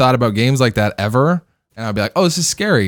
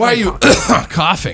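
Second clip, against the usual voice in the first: play-acted scolding outburst, yelped up high; 8 semitones higher than usual. Retelling how the other person's dad yelled about his cough: imitating dad screaming. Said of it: "screaming at you".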